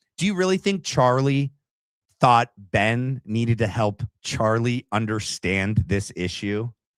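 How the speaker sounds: normal talking voice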